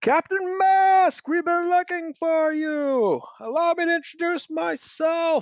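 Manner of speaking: very high, loud calling out over distance. Narrator voicing a ship captain striding to the quarterdeck, yelling across to another ship. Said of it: "yells out like".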